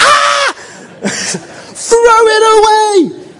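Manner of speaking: shrill, very high, very loud, drawn-out panicked scream. A father retells how he reacted when shown something old: retelling a girlish scream. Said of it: "I screamed like a girl".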